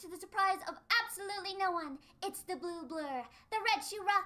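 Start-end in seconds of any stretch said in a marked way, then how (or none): none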